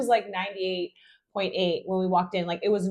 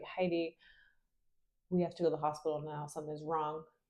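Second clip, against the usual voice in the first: hushed, barely audible half-whisper; 4 semitones lower, 11 dB quieter than usual. Retelling how a friend woke someone at night: imitating someone half-whispering. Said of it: "kinda, like, whispered".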